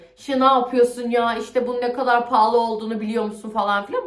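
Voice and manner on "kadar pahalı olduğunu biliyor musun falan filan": ordinary talk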